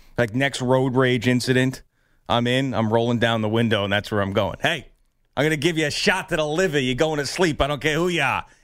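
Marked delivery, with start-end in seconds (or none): 4.6-8.5 put-on Boston Massachusetts accent, pitched up. Imagining a road rage incident, threatening a driver in a Massachusetts accent. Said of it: "In the Massachusetts accent".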